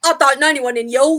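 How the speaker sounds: loud, dodgy-sounding Essex accent.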